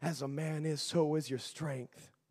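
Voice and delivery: low, goading, maniacal taunting tone. Acting out the ones taunting a man about his strength: imitating a maniacal mocking voice. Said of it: "I could just hear that maniacal voice".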